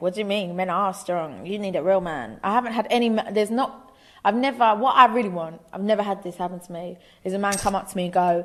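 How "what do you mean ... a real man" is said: ordinary delivery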